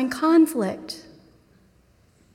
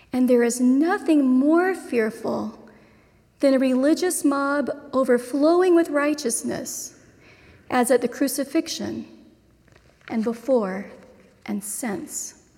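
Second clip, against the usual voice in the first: read slowly with long pauses. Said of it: "I'm gonna read it slowly".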